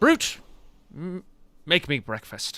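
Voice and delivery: loud, swooping, bossy bard voice. Voicing the bard ordering the brute to cook: voicing the bard giving an order.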